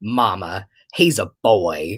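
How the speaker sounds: play-acted very slow, low, grave and earnest voice. Retelling a nephew's reply to his mother: imitating a serious child. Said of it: "but he looks at her so serious, and he goes".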